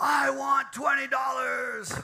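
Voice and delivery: shrill, slow, very loud, high, drawn-out top-of-the-lungs scream. Retelling how students had to scream for twenty dollars: imitating students screaming. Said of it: "I made them all scream, shout at the top of their lungs".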